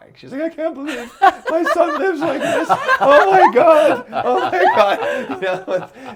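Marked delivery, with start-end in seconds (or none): 0.4-5.4 play-acted drawn-out tearful wailing sob, very high, very loud. Retelling a mother's reaction on seeing a messy apartment: imitating mom crying. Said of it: "She comes in and just starts crying".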